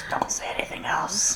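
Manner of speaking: hushed, breathy whisper. Voicing a character inside who whispers to another: whispering in character. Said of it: "one of them whispers to the other".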